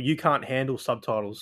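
plain

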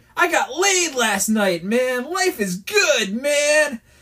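put-on, loud, high, drawn-out, bragging excited shout. Retelling a coworker suddenly shouting to the speaker in the field: imitating a coworker shouting. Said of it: "he shouts at me".

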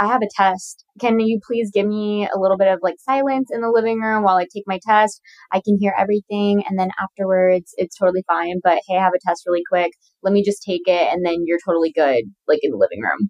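ordinary talk, nothing marked

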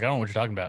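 bewildered, baffled, totally lost tone. Retelling own past replies while the microphone acted up: imitating own past clueless self. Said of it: "And I was, like, clueless".

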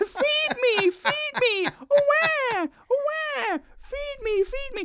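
put-on very high, shrill, very slow, drawn-out baby wail. Retelling how a toy baby went off when pressed: imitating a crying baby doll. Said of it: "the baby just started going".

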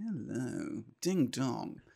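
cheeky, suggestive come-on manner. Comparing a greeting to a Carry On films character: Carry On films guy voice. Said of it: "that guy from the Carry On films".

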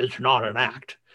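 put-on combative, very aggressive, hard-pushing tone. Podcaster recapping an episode, quoting a mother's reply to her daughter, mock-aggressive retort. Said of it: "in a very kind of aggressive voice".

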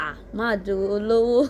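ordinary talk

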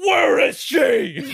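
shrill, very loud superhero voice, belted high and hard. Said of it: "Oh my God, it's Batman".

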